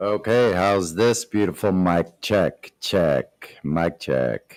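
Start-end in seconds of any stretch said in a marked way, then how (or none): 3.6-4.6 very low, deep bottom-register voice. Doing a mic check: low voice. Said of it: "That's my low voice".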